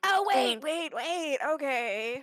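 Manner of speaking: panicked, frightened goblin voice. Voicing a dangling goblin threatened with being lifted higher: panicked goblin voice. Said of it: "Kane threatens to go higher".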